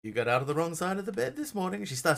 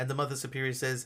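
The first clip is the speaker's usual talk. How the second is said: plain reading voice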